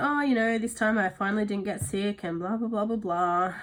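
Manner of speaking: boastful, pleased-with-myself bragging tone. Retelling what was said earlier about not getting sick: imitating own past boasting. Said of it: "I was boasting about".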